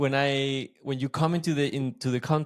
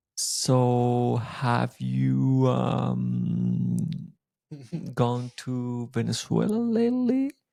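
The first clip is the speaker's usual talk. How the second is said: very slow, deliberate, drawn-out delivery. Imitating a friendly guy's question from a conversation, imitating a very slow talker. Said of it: "He will talk so slow".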